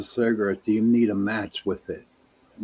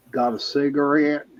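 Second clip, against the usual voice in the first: pitched-up, put-on southern accent; 6 semitones higher, 3 dB louder than usual. Retelling a voice heard asking for a cigarette, southern accent. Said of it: "you could hear in a southern voice saying".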